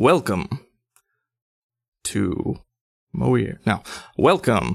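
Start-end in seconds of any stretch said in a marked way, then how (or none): 0.0-3.6 welcoming show announcer voice. Narrating a sphinx greeting those who enter, in an announcer voice. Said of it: "That's my same announcer voice".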